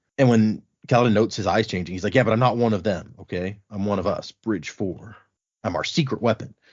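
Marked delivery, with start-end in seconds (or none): none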